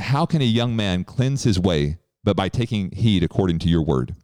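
ordinary delivery

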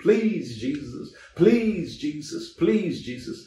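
tearful, slow, drawn-out crying, begging. Retelling a man with crutches in a prayer line: imitating a man crying out. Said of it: "He was crying out to the Lord".

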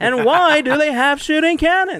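very high comic delivery. Joking about pirate ships in a stand-up bit: Seinfeld voice. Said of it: "it sounded like Seinfeld".

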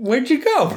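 mock-puzzled, very high-pitched voice.

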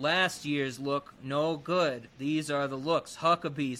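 deadpan, low, flat monotone announcer-style read. Quoting a woman in a commercial holding up clothes, imitating her monotone. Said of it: "she's so monotone".

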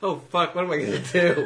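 high, panicked, blurted outburst. Acting out a man in pure panic as his train leaves: imitating someone panicking. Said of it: "His eyes going into all darting back and forth".

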